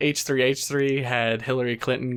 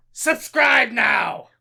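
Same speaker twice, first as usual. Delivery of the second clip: very high rasping squawk; 11 semitones higher, 4 dB louder than usual. Doing a mock celebrity cameo praising the channel: Gilbert Gottfried impression. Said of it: "I am Iago from Aladdin".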